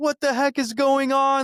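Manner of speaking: very high, loud, frantic, exasperated scream. Acting out a chaotic home scene: imitating someone screaming. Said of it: "Or I could be screaming".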